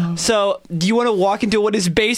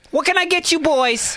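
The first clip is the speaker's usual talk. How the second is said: put-on pitched-up New Jersey accent; 7 semitones higher than usual. The narrator voices a waitress greeting the players at their table, in a Jersey accent. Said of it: "when you're doing a Jersey accent".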